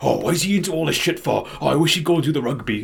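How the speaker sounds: put-on strong Welsh valleys accent. Retelling what a friend's stepdad said: imitating a Welsh valleys man. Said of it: "this super valleys man".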